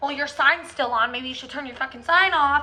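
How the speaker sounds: snarled, hostile, snarling rant. Retelling a drive-through customer's complaint: imitating a snarling customer.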